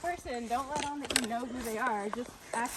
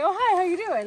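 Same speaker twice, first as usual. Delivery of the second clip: cheery, very loud, pitched-up, friendly voice; 7 semitones higher, 10 dB louder than usual. Recounting greeting a man who walked up to her; retelling a pleasant greeting. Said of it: "really pleasant".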